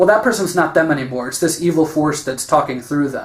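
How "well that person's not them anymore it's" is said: ordinary delivery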